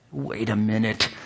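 through clenched teeth. Reading a story, the blacksmith speaks through clenched teeth. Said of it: "said the blacksmith with clenched teeth".

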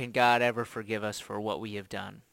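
ordinary talk

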